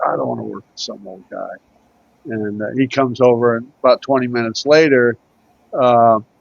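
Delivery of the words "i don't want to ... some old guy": muttered under the breath, much quieter, lower. Retelling what a man told to work with him said, muttering under his breath. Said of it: "under his breath".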